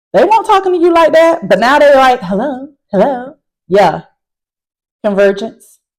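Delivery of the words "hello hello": sudden switch into a phone voice. Talking about parents changing their voice on calls, doing a switched-up phone voice. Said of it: "switch it up on the phone".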